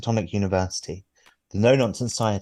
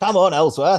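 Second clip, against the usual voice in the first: very high, loud shout; 10 semitones higher, 7 dB louder than usual. A narrator voicing someone calling from inside the ship, shouting. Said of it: "Shouts another voice from inside the ship".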